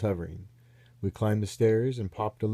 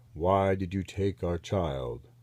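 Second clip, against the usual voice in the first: heavy, deep, slow, deliberate, drawn-out alien voice; 4 semitones lower than usual. Reading a story where a voice in a spaceship chamber speaks: deep voice. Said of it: "A deep voice said".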